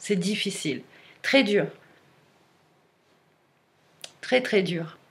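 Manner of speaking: tearful, teary voice close to crying. Speaking of something hard to share, tearful, close to crying. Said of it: "J'en ai les larmes aux yeux".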